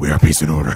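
booming, very loud demonic voice. Voicing a game character, stacking a demon voice on top of a demon voice. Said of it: "It's tough to do demon voice on top of demon voice".

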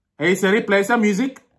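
fast, put-on Pakistani accent. Testing whether the voice assistant understands accents, speaking in a Pakistani accent. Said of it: "let me do the Pakistani accent".

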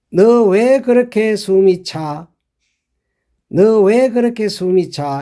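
ordinary talk, nothing marked

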